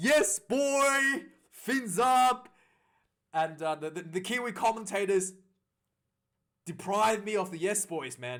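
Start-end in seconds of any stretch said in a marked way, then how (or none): 0.0-2.5 re-enacted scream, much higher, slower. Fan recounts watching a long try, retelling own screaming. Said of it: "I was literally screaming".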